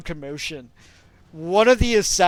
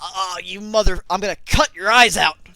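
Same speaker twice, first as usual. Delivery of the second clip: pained, furious voice. A game master voices a punched opponent lurching over, as a pained angry threat. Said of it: "And he like lurches over".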